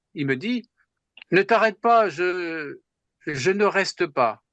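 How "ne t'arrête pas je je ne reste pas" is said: put-on slight German accent. Speaker recalls what a renowned mathematician said to him, with a slight German accent. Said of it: "avec un léger accent allemand".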